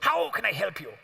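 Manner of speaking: put-on outrageous old-time commercial voice. Retelling a phone call, the speaker voices the man who answered: imitating Q's outrageous accent. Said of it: "speaks with the most outrageous accent".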